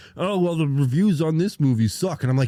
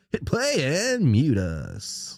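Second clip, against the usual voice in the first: put-on morning radio dj voice. Co-hosts signing off their show, one uses a morning radio DJ voice. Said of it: "The morning radio".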